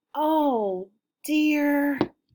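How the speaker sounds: worried little voice. Reading a story aloud, voicing Miss Teaberry worried about the ball: Miss Teaberry's worried voice. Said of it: "her voice might sound something like this".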